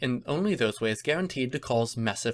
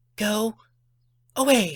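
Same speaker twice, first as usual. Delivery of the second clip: high, loud, dismissive hiss; 9 semitones higher, 5 dB louder than usual. Narrator reads Pinkie's line in a story, hissing. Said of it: "Pinkie hissed".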